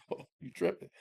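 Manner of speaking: mock talking while laughing. Acting out his own reply as an argument starts: imitating himself laughing while talking. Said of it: "laughing like that".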